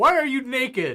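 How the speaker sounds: in-character, very high, very loud, shrill, drawn-out yell. Yelling at a guard as the storage door opens: yelling in character. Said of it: "I'm gonna yell out".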